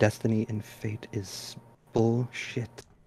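whispering under breath. Voicing a character muttering doubt about destiny: whispering under her breath. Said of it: "Ingrid is gonna whisper under her breath".

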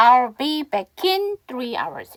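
unhurried, slow, careful word-by-word model reading. Trying the English sentence once more for pronunciation practice, slow pace. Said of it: "천천히 다시 한번 해보면".

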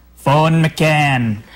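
put-on strong British accent, one word drawn out. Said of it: "It's a really strong accent".

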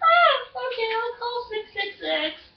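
put-on high little-kid voice, very slow and drawn out. Showing another how to play the caller: acting like a little kid. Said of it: "act like you're a little kid calling".

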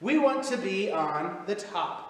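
ordinary delivery, nothing marked

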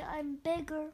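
plain

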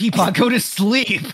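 high, menacing, threatening shout from a group. Performing a requested line to peepaw: threatening shout. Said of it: "I feel like we're being really threatening".

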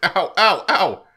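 hurt, pained yelps of ow. A game character gets pinched on the cheek, yelping in pain. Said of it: "Did I pinch you too hard?".

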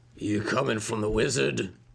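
slightly rougher, gravelly voice. Speaker retells a different voice rising from the muttering, in a slightly gravelly voice. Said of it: "It's a little gravelier and it says like".

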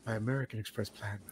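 silky, suave, smooth ad voice, very hushed murmur. Imitating how Jake turns suave in his videos: imitating Jake, suave and smooth. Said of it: "smoothly comes into his videos and just turns suave".

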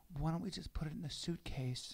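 mock-gentle soft voice. Retelling a conversation in the garage, mock-gentle soft voice. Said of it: "I'm being really sensitive".

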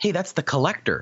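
mock-whispered, put-on hushed whisper. Retelling what a daughter whispered in the theater, imitating a whisper. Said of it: "she whispered to me in the theater".

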